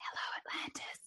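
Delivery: barely audible whisper under the breath. Retelling a hearing test in the car with loud music: imitating own whisper. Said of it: "I was whispering words underneath my breath".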